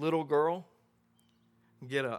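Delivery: put-on sweet-sounding voice. Telling the story, speaker acts out his words to the girl, retelling in a sweet voice. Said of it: "he tells her in a sweet voice".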